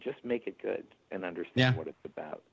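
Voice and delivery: ordinary talk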